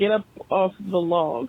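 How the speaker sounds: ordinary delivery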